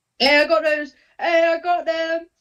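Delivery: really loud, high yelling. A player in a tabletop game answers the game master, yelling really loud. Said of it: "I'm yelling really loud".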